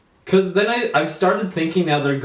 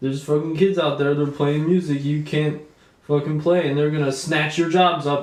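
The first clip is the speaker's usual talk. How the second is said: ordinary delivery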